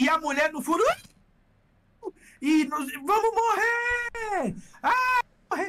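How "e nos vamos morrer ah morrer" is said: put-on very slow high rising scream, morrer stretched. Recounting a plane scare, imitating a brazilian on board screaming. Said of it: "Brasileiro que tá gritando".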